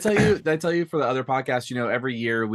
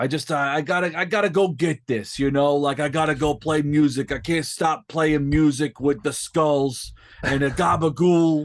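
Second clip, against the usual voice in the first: put-on drawn-out Brooklyn accent; 5 semitones higher, 4 dB louder than usual. Describing a bass player character a friend made, the speaker performs him: Jerry Lonely Brooklyn accent. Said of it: "some like Long Island, like Brooklyn".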